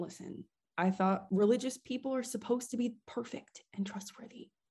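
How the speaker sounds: put-on whisper. Whispering in character to the whole group: whispering in character. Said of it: "in character, I am whispering to everyone".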